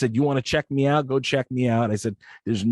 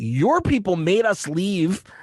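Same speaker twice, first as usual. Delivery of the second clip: mock full-on high yelling, every word stretched; 6 semitones higher than usual. Retelling a fight with airport staff over tickets, imitating own screaming. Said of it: "screaming at these people".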